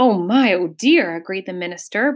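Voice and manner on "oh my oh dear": breathing with great difficulty. The minister agrees with the Duke, breathing with great difficulty. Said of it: "breathing with great difficulty".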